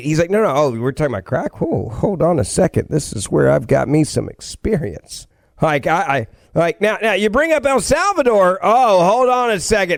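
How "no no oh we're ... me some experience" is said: calm, easy, unbothered musing. Mocking how calm someone was about crack in an interview: calm Hunter Biden impression. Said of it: "did you notice how calm he was?".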